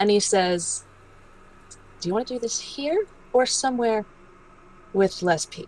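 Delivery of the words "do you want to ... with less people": quiet, lowered, hushed, friendly undertone. Retelling a man's friendly question to him, lowered voice. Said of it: "he lowers his voice".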